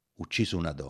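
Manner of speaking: ordinary delivery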